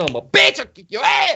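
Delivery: high, swooping, angry cussing-out voice.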